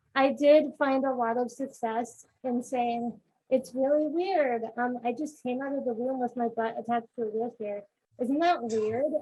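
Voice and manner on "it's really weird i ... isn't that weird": ordinary talk, nothing marked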